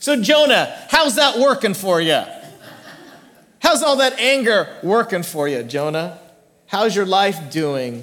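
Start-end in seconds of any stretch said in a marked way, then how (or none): 0.0-6.2 leaning heavily into a Texas drawl. Imagining a TV host questioning Jonah: Doctor Phil Texas drawl. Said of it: "asks in that Texas drawl like only Doctor Phil can do".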